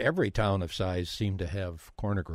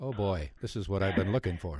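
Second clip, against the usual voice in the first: normal talking voice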